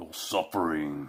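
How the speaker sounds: low, deep, hushed horror-villain voice, barely above silence. Speaker tries saying his line in the voice of Hellraiser, a Pinhead voice. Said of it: "in the voice of Hellraiser".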